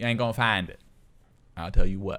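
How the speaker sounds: put-on tough urban street girl voice. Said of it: "I know I sound like one".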